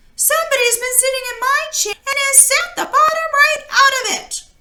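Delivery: very high, little, wee bear voice. Reading the Goldilocks story aloud, voicing the smallest bear: little small wee bear voice. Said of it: "in his little small wee voice".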